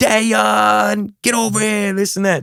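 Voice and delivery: mock very slow, loud, long drawn-out shout. Retelling how she would call from far away: imitating mom yelling. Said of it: "And she would yell".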